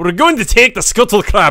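loud, jokey, laid-on, put-on Scottish accent. Asked if they had to say it scottish, the speaker repeats: mock scottish accent. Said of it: "Did you have to say that, like, Scottish?".

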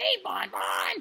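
very high, rasping, creaky animatronic voice. Talking about favorite characters, doing a Funtime Freddy voice. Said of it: "I sound like it's a voice of him".

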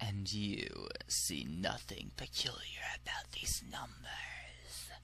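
soft, slow, whispered doctor voice.

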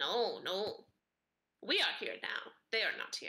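crow voice in short, plain, broken words. A game master voices a crow answering a player's questions, talking crow voice. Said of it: "One flutters over to you and starts pecking at the food in your hand".

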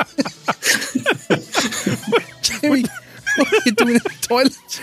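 high, laughing, teasing squeal with giggling.

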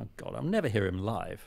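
normal talking voice

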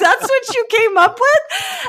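high, loud, slow, mocking disbelief.

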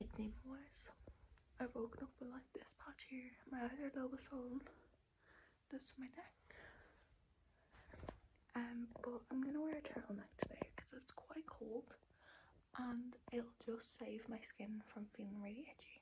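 hushed whisper. Showing a skin flare-up early in the morning while others sleep: whispering. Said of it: "I'm trying to whisper 'cause it's seven A M".

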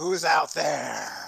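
loud, throaty, rasping, rough guttural voice. A game master voices someone the players hear calling out, guttural voice. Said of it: "you hear a guttural voice going".

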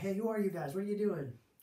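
high, challenging put-on yell, calling out across distance. Retelling how a group across the street called out: imitating someone yelling. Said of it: "they start yelling".

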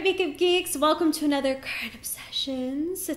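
awkwardly sultry, clumsy sexy-sounding voice. Vlogger opens her monthly favorites video for makeup geeks, in an awkward sexy voice. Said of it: "It's my awkward sexy voice".

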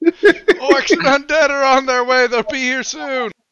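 shrill, very high-pitched shouting. In a fantasy game, speaking through a spell that magnifies the voice, yelling. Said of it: "but I'm going to yell anyway".

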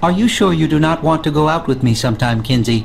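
monotone computer voice. Acting a scene addressed to Kinsey, in a monotone computer voice. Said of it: "a monotone computery voice like yours".

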